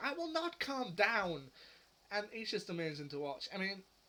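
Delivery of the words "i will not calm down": acted, escalating, shrill, loud, high-pitched, drawn-out shout. Imitating the Security Chief as things go wrong: loud, high-pitched Security Chief voice. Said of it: "he gets louder and louder and more high-pitched".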